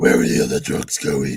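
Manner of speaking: rough gravelly rasp. Mocking a Batman line that sounded like gargling rocks, Batman voice. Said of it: "It sounded like he was gargling rocks when he was talking as Batman".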